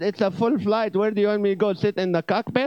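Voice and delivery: put-on Middle Eastern accent. Retelling his reply to her on a full flight, in a pushed Middle Eastern accent. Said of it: "So I pushed my Middle Eastern accent".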